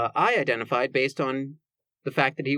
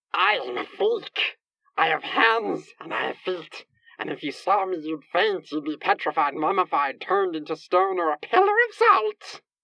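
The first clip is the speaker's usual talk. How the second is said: ghostly, strange mongoose creature voice; 4 semitones higher than usual. Retelling what a ghost in the form of a mongoose once said: Gollum-like voice. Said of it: "It's starting at Gollum".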